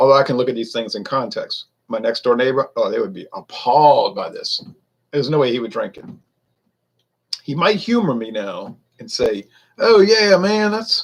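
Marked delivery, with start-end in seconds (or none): 9.8-11.0 put-on Mississippi accent, higher. Imitating a next-door neighbor from Mississippi politely praising a beer: imitating neighbor's Mississippi accent. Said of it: "however his accent goes".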